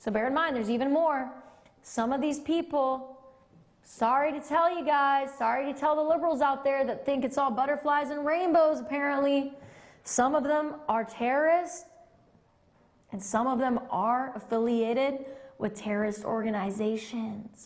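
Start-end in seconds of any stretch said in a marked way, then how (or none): 10.0-17.7 secretive, confiding stage half-whisper. Saying something aloud that the wrong person might overhear: half-whispering. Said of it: "I feel like I have to whisper that".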